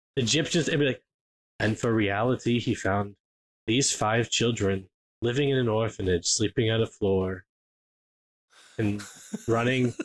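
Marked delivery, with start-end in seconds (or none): 1.6-10.0 low, weird monotone documentary narrator drone. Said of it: "this weird monotone voice".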